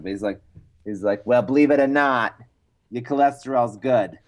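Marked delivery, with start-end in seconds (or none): 1.3-4.1 thick put-on New York accent. Someone retells their doctor's phone call in a thick new york accent. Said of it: "a thick New York accent".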